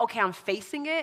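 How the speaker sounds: ordinary talk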